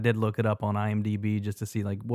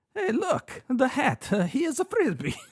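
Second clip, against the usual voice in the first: very high character voice with a sing-song swing. Quoting a boat driver's movie line about a flying hat, in Mario voice. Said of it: "I did that in Mario's voice".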